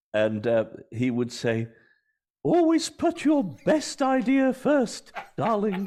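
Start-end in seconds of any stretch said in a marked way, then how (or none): 2.4-5.8 very high, posh, upper-class aristocratic voice. Imitating a former teacher's advice on writing: imitating a teacher's aristocratic voice. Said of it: "so I'll try and imitate him".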